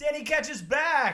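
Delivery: very loud, high, all-out yelled shout. Reading a comic solicitation aloud, title in capital letters: yelling the title. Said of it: "And I yelled it because it's all in capital letters".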